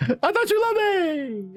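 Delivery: fading, distant voice. Thrown into a cavern, calling back with voice fading into distance. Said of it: "As the voice goes distant".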